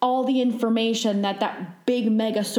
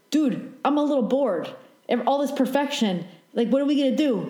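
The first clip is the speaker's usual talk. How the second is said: put-on pushy, pressuring New York accent; 4 semitones higher than usual. Acting out someone upstairs speaking, in a New York accent. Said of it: "why do you have a New York accent?".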